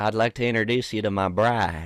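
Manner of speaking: put-on southern-sounding accent. Doing a voice bit: southern accent. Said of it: "It kind of sounds southern".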